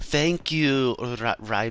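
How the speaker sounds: fumbling, bad put-on Irish accent, very slow. Imitating a game character thanking the player: bad put-on irish accent. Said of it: "I can't fucking do accents".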